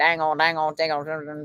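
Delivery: slow, drawn-out mumble. Trying to remember how Boomhauer sounds, speaker attempts a mumbling Boomhauer voice. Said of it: "was that a good Boomhauer? ... say dangle and like mumble".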